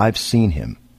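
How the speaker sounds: put-on solemn, completely earnest, grave tone. Retelling what a woman said about the hitchhiker: imitating a dead serious tone. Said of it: "looked at me dead serious and went".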